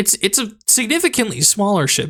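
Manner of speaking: voice cracking and giving out, pitched high. Narrating to a listener while losing their voice, voice cracking. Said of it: "I'm losing my voice".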